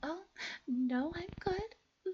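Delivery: put-on very high, sweet, polite, drawn-out nice-girl voice. Retelling a reply to a store worker: imitating own high-pitched voice. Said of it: "went up in pitch".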